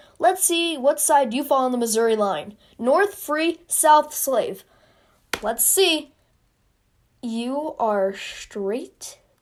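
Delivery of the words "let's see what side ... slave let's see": normal talking voice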